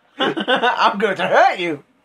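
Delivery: slow, loud, mock tough guy voice through laughter.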